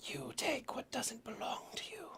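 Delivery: whispered voice. Voicing a voice the player hears inside their head: voice heard inside your head. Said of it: "you hear a voice. Not audible, but into your head".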